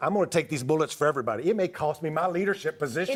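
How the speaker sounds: ordinary talk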